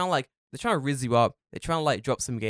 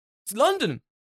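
much higher, louder, flustered, insistent tone. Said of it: "he's like".

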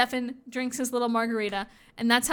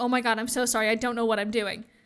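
put-on terrified voice. Retelling a TV episode scene, imitating terrified Liam.

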